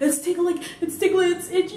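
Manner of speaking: high, loud, rattled, frantic panicked complaining.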